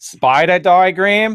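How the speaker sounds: very high, loud, put-on American accent. Repeating a word the other speaker misheard, joking: put-on American accent. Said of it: "closest thing I've ever seen to you doing an American accent".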